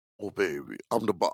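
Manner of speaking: put-on deep South Louisiana Southern accent. Describing the real woman behind a film character, imitate her deep south louisiana accent. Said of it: "a deep South Louisiana accent".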